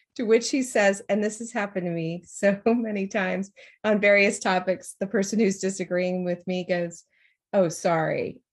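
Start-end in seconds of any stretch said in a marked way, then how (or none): 7.5-8.3 put-on sarcastic tone on sorry. Imitating the person disagreeing with her, a mock sarcastic apology. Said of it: "sorry, like, you're such a loser".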